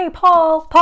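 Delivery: loud, high-pitched shout.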